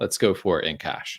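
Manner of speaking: usual speaking voice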